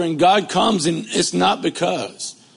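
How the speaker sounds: voice cracking and breaking mid-line. A preacher mid-sermon as his preacher voice gives out: voice cracking. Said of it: "that's my preacher voice breaking up".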